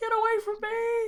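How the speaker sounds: full-throated, shrill, very high top-of-lungs scream. Narrator voicing a man in the game trying to shoot: screaming at the top of lungs. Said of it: "He is screaming at the top of his lungs".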